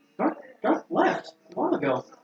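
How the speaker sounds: confused, bewildered, high and drawn-out tone. Voicing a character who opens the door: confused. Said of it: "she's, like, confused".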